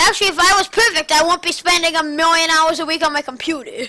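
loud mocking sarcasm. Bickering with someone about being perfect, sarcastic. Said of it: "I'm being sarcastic".

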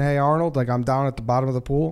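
ordinary talk, nothing marked

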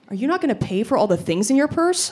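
mock dry, matter-of-fact, dead serious deadpan. Speaker quotes a tour companion accusing them in front of the cashier, retelling a deadpan accusation. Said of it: "just deadpan in front of the cashier".

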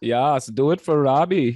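put-on German accent impression. Repeating a quoted line about a German cinematographer: put-on German accent. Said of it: "Is that a good German impression?".

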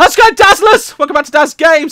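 loud shouting. Opening a video with a loud greeting to viewers: shouting. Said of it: "I shouldn't shout".

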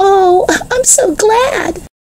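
delighted cry, very high, slow and drawn out. Reading a character's reply on learning someone won the race: delighted cry. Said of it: "cried Jesse, delighted".

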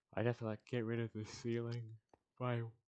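talking through a yawn. Planning stairs for this game episode, yawning while talking. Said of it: "Sorry, yawning".

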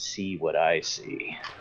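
very slow, close, hushed whisper. Voicing a Malkavian lieutenant who stares into a player's eyes: whispering. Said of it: "and whispers".

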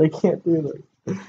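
speaking through laughter. Trying to start a video but unable to stop; laughing while talking. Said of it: "laughing too much".

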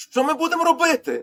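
frightened. The doctor asking the alchemist what they will do now, frightened. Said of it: "злякано промовив лікар".

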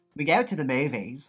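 imitated Australian accent. Showing the only line that works: put-on australian accent. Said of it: "the only thing I can do is".

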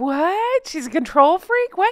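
feigned astonishment. Discussing a woman who wants to control the narrative, in a fake surprise voice. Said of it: "That's my fake surprise voice".

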